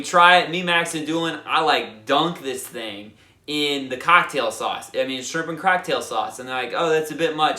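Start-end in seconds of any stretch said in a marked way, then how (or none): 6.8-7.6 put-on Australian accent. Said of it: "they sound so cool and nice with their Australian accents".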